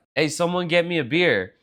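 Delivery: ordinary delivery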